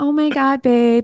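put-on cutesy little baby voice, high and slow. Imagining a woman who talks to you like a baby: cutesy baby voice. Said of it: "like that baby voice".

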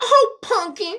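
put-on very high, sweet, doting southern granny voice. Reacting to another speaker's way of saying a word, imitating a grandma. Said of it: "You sound like that grandma".

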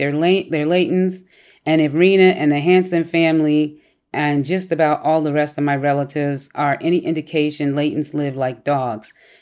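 ordinary talk, nothing marked

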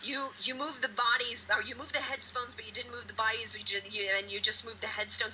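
ordinary delivery

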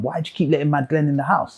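mock indignant anger. Retelling complaining to mum about glenn: imitating own angry question. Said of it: "So I used to get angry at my mum".

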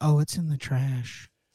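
play-acted grave, very somber tone. Retelling a daughter's answer about where it went: imitating a somber tone. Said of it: "very somber sounding is how she said that".

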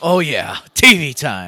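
mock eager, relishing delight, slow and drawn out. Imitating the other speaker perking up at TV time: imitating someone excited. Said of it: "You got excited".

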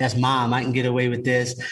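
ordinary delivery

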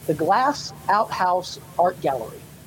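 slow, deliberate, each word laid with care. Naming another california oddity, the speaker says the gallery's name slowly. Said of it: "I'm going to say this slowly".

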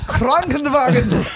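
very high-pitched, put-on German accent. Joining a chat about someone's accent, in a put-on German accent. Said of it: "It's German".

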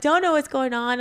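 mock-sobbing, put-on tearful, crying voice. Speaker recalls being alone in a bathroom, unsure what was happening; retelling own past crying. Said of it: "And so I'm like crying".

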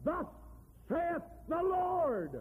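high, swooping, triumphant proclamation, Lord drawn out. Describing how the prophets of God speak, retelling a victorious proclamation. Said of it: "proclaim with a victory in their voice".

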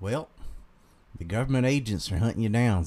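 everyday, lightly southern Carolina accent. Asked to read lines in a southern accent, reading in a mild Carolina southern accent. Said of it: "I can just do my normal Carolina one".

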